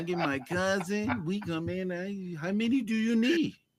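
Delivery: over-the-top, cartoonish, exaggerated Mexican accent. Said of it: "Why you sound like Speedy Gonzalez?".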